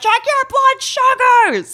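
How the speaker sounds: sharp, very high, shrill yell. Retelling a home visit with an older man: imitating own past yelling. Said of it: "I'm yelling at this older man".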